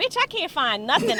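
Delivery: play-acted winded, breathless, panting, griping tone. Retelling a yoga class where the instructor says find your breath: imitating own panting.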